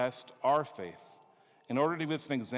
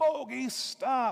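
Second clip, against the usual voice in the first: mock, very high yell; 10 semitones higher, 4 dB louder than usual. Retelling waking at night to Bogey scratching on the kennel: retelling a yell. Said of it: "I'm yelling down".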